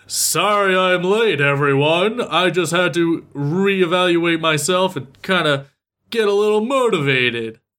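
beefy muscleman voice. Retelling a character's line as he bursts through a wall: beefcake voice. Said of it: "who is this beefcake voice coming through the wall".

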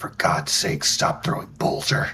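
mumbled aside, barely out loud, under the breath. Voicing a character muttering about a repeated game move: muttered under his breath. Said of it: "utter under his breath".

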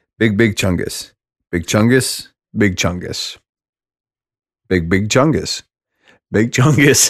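straight face barely holding back laughter. Announcing the final word, struggling to keep a straight face. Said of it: "I can't even do this with a straight face".

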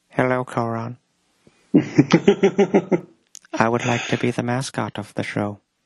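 chilling, creepy horror-film killer voice. Voicing a would-be show mascot pitching himself to Coron, Anthony Hopkins-like voice. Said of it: "sounds more like Anthony Hopkins from Silence of the Lambs".

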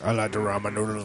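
put-on Southern drawl. Retelling how a roommate talked, imitating a roommate's Sling Blade voice. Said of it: "I had a roommate who sounded like Sling Blade".

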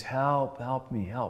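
very weak, feeble, slow crying out. Retelling finding a missing man who calls out for help, imitating a very weak cry. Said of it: "call out in a very weak voice".

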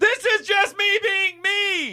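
very high, loud, every word stretched out. Mocking how a TV pundit claims he always talks: Stephen A. Smith impression. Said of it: "I love how Stephen A. Smith acts like".

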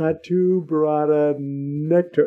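very slow, every syllable stretched out. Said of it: "try to get it right".

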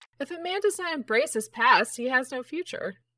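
high, loud, playful put-on ghost voice.

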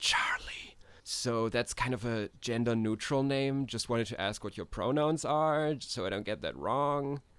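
soft, private, secretive whisper close to the ear. Voicing a character who leans close and asks a question: whispering in character. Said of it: "whispers in your ear so no one else can hear".

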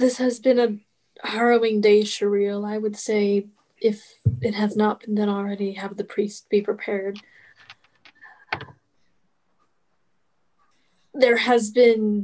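halting, struggling for words. Speaking in character to Shireel after a harrowing day: struggling for words. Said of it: "he's struggling with the words".

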